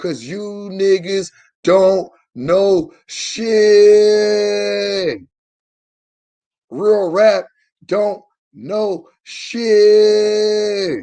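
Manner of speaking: very slow, drawn-out delivery.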